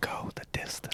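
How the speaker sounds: hushed, very quiet, nearly silent whisper. Trading Field of Dreams lines in conversation: Field of Dreams whisper. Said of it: "Sorry for whispering, but that's how the voice comes".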